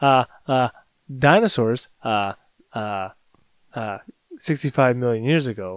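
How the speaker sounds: quirky, slow, hesitant stop-start delivery, stumbling with fillers. Imitating an actor from a dinosaur movie: Jeff Goldblum impression. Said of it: "That's my Jeff Goldblum impression".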